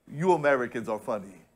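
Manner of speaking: put-on Nigerian accent, low and soft. Retelling a pastor's reply to the speaker's remark about America, in a Nigerian accent. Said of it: "That's my Nigerian voice".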